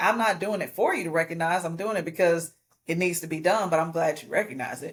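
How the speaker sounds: ordinary talk, nothing marked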